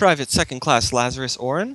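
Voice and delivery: woman's voice, crackling as through an intercom. Narrating the scene, the speaker voices the call over the comms: woman's voice over comms. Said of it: "woman's voice like says".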